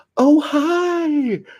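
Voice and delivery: shrill, booming, very high, loud yell, hi drawn out. Telling a story, acting out a woman yelling out the window: retelling a yell. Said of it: "when she yelled out the window".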